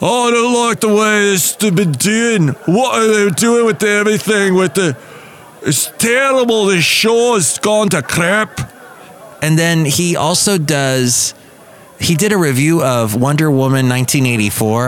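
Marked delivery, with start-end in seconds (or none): 0.0-8.6 put-on heavy Scottish accent, bone-dry complaining tone, pitched up. Imitate a guy lambasting the way Doctor Who is going, in a really thick, dry Scottish accent. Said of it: "a really thick Scottish accent".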